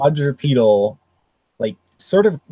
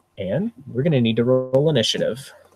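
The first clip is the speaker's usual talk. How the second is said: ordinary talk, nothing marked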